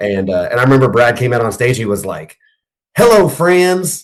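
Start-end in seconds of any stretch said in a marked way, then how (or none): 3.0-4.0 put-on friendly Southern Mississippi accent. Retelling Brad coming out on stage to greet the crowd: imitating Brad's Southern Mississippi accent. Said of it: "real Southern Mississippi".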